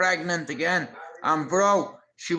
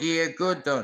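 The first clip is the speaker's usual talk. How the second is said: put-on Jamaican accent. Retelling what the neighbour said to him: imitating a jamaican accent. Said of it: "Jamaican lady".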